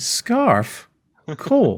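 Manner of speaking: very high, odd-voiced, puzzled reaction. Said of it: "'cause he's like".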